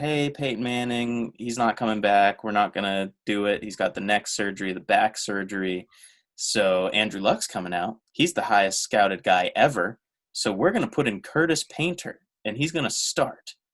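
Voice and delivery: ordinary talk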